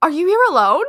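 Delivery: put-on very loud, high shout in strong, thick Kiwi accent. Retelling how a stranger came running up in the line: shouting in strong kiwi accent. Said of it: "shouting in a strong Kiwi accent".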